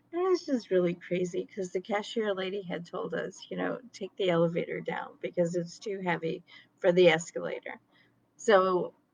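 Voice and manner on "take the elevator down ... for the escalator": ordinary delivery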